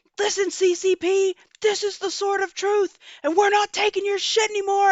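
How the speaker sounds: theatrical stage screaming, high and level. Retelling someone smashing a drone with a sword: imitating someone screaming. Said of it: "he's up there screaming, like".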